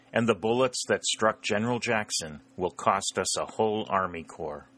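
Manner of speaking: ordinary delivery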